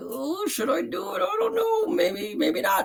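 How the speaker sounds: very high, unsure, hesitant, faltering, dithering voice. Showing how a tentative person sounds: acting out a tentative person. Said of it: "They're a little tentative, like".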